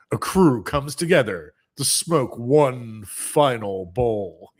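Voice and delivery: deep, low voice. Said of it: "I can speak with a deep voice like this".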